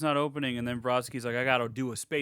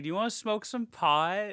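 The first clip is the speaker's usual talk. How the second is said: put-on thick Valley Girl accent, laid on, pitched up; 8 semitones higher than usual. Retelling a scene, speaker quotes a girl's line in a valley girl accent. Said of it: "the most Valley Girl accent I've ever heard".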